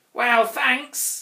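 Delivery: put-on sniffling, begrudging reply. The little Grouch answers the Grunt, who begged him to stay, sniffed. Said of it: "sniffed the little Grouch".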